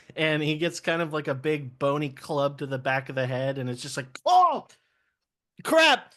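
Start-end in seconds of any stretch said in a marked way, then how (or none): 4.3-6.0 alarmed, very high, loud, panicked pirate yelp. Voicing a pirate hit on the head by a skeleton: panicked pirate. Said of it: "And in a panic".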